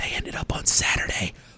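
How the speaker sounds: soft unvoiced whisper, secretive.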